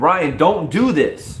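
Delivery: mock, pleading, begging voice. Retelling a woman's plea to a man, imitating someone pleading. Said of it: "she's pleading with him".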